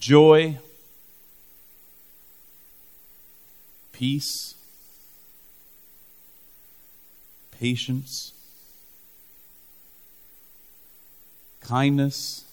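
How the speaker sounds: each word very slow, drawn out, spaced apart. Speaker tells listeners to think about each word: very slow. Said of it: "I'm going to say this really slow".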